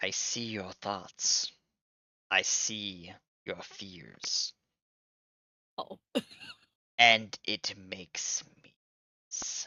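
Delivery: deep, guttural, rumbling ancient voice. Narrating a game, a presence in a character's head speaks: deep guttural ancient voice. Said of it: "a deep kind of guttural, kind of like ancient deep voice".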